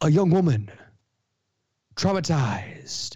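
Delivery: slam-poetry delivery. Asked for a film synopsis, the speaker reads it like slam poetry. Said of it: "I'm going to read it like slam poetry".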